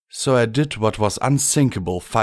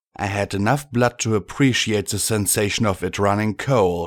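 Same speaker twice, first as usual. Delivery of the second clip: plain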